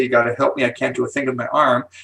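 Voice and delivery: ordinary talk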